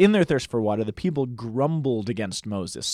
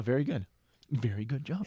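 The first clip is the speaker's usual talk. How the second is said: soft, condescending, patronizing pat-on-the-head praising tone; 10 dB quieter than usual. Praising another person's correct answer: condescending. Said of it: "that sounded condescending".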